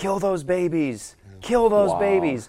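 animated, swooping call-out. Recounting a driver passing by as they left, the speaker retells someone shouting. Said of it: "was shouting".

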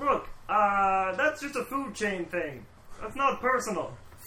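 loud, high-pitched puppet voice. During a tabletop game, the player speaks as the fat man in a Bert voice. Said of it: "fat man! ... That's [name]'s voice for sure".

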